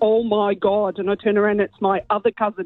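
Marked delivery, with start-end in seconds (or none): 0.0-1.0 imitated thick Derry accent. Retelling hearing a cousin in a pub bathroom: thick Derry accent. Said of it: "in a really thick Derry accent".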